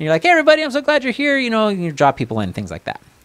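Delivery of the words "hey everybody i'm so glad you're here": very high, bright, upbeat presenter voice. Showing how to open a meeting to draw people in: upbeat presenter greeting. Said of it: "Or are you more upbeat?".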